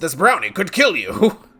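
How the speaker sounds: loud, belted cartoon character voice. Talking with another player during a game, Strong Bad voice. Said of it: "Strong bad voice".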